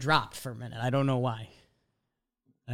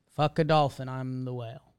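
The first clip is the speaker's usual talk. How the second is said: ordinary talk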